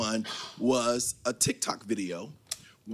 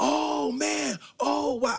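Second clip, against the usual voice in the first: mock, very high, drawn-out delighted squeal. Retelling boys opening a gift box, imitating kids screaming with joy. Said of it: "So they're screaming, like".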